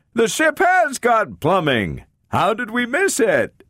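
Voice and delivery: very high, booming, swooping joyful shout. Narrator reads Donovan calling out to Greg, booming glad howl. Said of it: "it howled".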